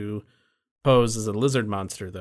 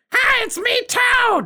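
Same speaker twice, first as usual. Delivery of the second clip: very high, loud, announcing character voice; 8 dB louder than usual. Speaker joking about how an actor won't sound in the role, Toad voice. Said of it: "he's not going to be doing the Toad voice".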